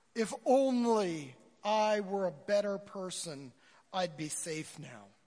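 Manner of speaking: earnest proclaiming delivery, drawn out. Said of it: "loudly proclaims in his loudest voice possible".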